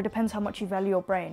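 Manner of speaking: ordinary talk, nothing marked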